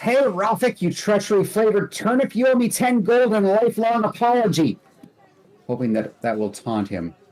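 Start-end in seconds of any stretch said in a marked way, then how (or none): 0.0-4.8 shouting, much higher. Tobith shouts at Ralphic from thirty feet away, hoping to taunt him; shouting. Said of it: "And he shouts".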